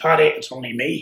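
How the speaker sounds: loud, unhurried, drawn-out called-out shout. Retelling how a driver called out from the car door: imitating someone shouting. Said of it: "he was shouting".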